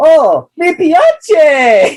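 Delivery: very high-pitched, loud put-on voice. Retelling Zac Efron hearing his Italian dub, imitating a really high-pitched voice. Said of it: "Really high pitch".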